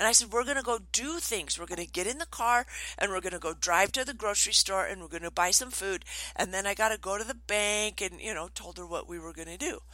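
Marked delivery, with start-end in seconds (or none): none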